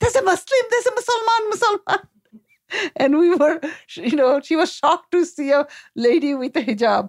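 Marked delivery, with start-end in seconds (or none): 0.0-2.0 mock excited, very high three-year-old shriek. Parent retelling her three-year-old daughter spotting a woman in hijab, imitating a child's excited scream. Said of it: "She screamed out".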